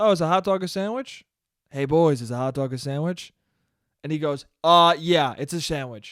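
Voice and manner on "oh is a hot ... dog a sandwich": super-casual, relaxed, laid-back, offhand tone. Speaker reenacts putting a question to a group of guys, retelling a super-casual ask. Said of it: "I was like this".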